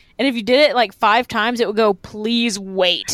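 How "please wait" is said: mock, really mean, nasty automated machine voice. Recalling a college crosswalk button pressed five times: imitating a mean crosswalk voice. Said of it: "in like a really mean voice".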